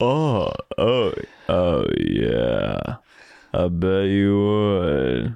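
very slow, stretched, swooping up and down. Showing how he answered anybody for a month: Earl Skakel impression. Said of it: "like Earl Skakel".

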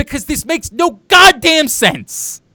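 loud yelling with the pitch pushed up high. Arguing with the other speaker, who disputed the point, yelling. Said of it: "which is why I'm yelling".

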